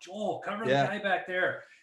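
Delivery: high, carrying call kept short of full blast. Retelling a hockey game, calling to a defenseman: imitating someone yelling. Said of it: "I'm yelling at him".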